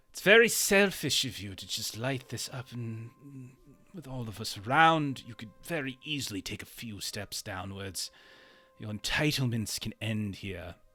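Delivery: pointed, grumbling, passive-aggressive complaining tone. Voicing Neuwirth complaining to someone about the smoke: complaining. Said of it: "Neuwirth kind of complaining about the smoke".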